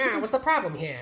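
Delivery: high, throaty, back-of-the-throat movie villain voice. Retelling a movie villain's line: imitating a high-pitched, back-of-throat voice. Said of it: "He's like".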